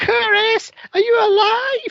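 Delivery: play-acted, very high, loud, drawn-out screech. Retelling a movie character screaming when the truck attacks: imitating her screaming. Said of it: "she screams".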